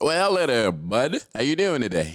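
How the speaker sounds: put-on voice, loud and swooping.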